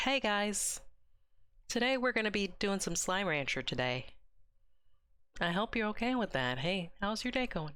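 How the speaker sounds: relaxed, soothing, easygoing and calming voice. Imitating the other person greeting viewers: imitating a chill calming voice. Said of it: "I love that you have such a chill voice".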